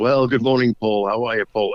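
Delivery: put-on booming voice. Retelling a greeting heard while walking down the street with shopping, imitating a booming voice. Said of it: "I hear this voice boom out".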